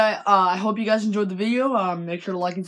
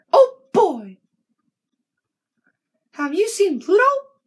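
pitched way up, loud and bouncy; 10 semitones higher, 5 dB louder than usual. Showing off an impression for the camera, Mickey Mouse voice. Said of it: "I can actually really, really do Mickey Mouse".

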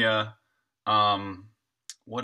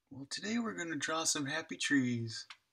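very quiet, clumsy hushed murmur, pitched up; 5 semitones higher, 10 dB quieter than usual. Greeting the viewers before drawing the background: not very good Bob Ross voice. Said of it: "I gotta get better at my Bob Ross voice".

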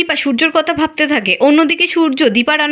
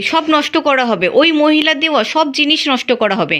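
plain reading voice

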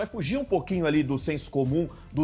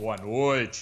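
very low, deep, big announcer voice, slow-paced; 8 semitones lower than usual. Urged to do it again, saying good evening in Cid Moreira deep voice. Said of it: "tentar imitar o vozeirão do Cid Moreira".

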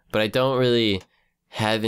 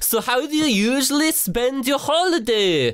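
very high, drawn-out, slow, put-on Swedish accent. Reading out a question sent in by a viewer: put-on Swedish accent. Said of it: "I might be able to do Swe-, Swedish".

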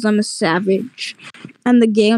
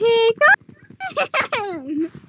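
very high, swooping character voice; 14 semitones higher, 3 dB quieter than usual. Saying they do that impression with friends: Pickle Man impression. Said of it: "I actually do that impression".

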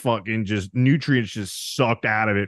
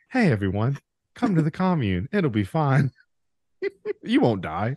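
mild, easygoing, gentle, pitched-up spokesman voice; 5 semitones higher than usual. Proposing a friend as commune spokesman and acting out his pitch: imitating Mark's soft voice. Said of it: "because you have the softest voice".

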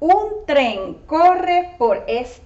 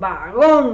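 last syllable gón of vagón strongly stressed; 6 semitones lower than usual. Showing a learner how to say the word: stress on GÓN. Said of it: "you have to say it really strong".

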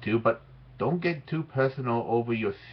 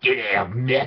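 deep, extra-phlegmy Australian accent; 4 dB louder than usual. Vlogger redoing a line with more Aussie phlegm, phlegmy Aussie accent. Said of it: "Maybe I should put that in a little bit more Aussie phlegm".

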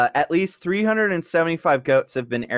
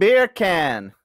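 put-on Jamaican accent. Answering a request to say it with a jamaican accent: put-on jamaican accent. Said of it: "how do you say it with a Jamaican accent?".

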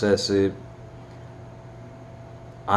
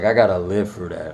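ordinary talk

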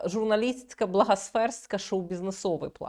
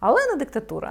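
ironic, sarcastic and mocking, pitched up; 6 semitones higher, 5 dB louder than usual. Discussing claims made in an interview, the speaker says it sarcastically. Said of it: "я говорю це з сарказмом".

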